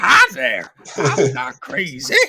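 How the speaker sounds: put-on loud old-timey old-west gold prospector voice. An aspiring voice actor showing off character voices, old-timey gold prospector voice. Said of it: "Old timey gold prospector".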